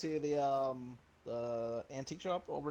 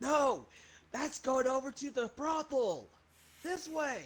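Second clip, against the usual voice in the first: very high, shrill, loud yell; 10 semitones higher than usual. A player calls out to a companion heading the wrong way, yelling out loud. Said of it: "I yell out loud to him like".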